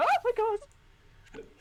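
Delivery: very high, loud, thrilled excited squeal. Ashling greets strangers introducing a walrus manservant, with an excited squeal. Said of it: "audibly squeals".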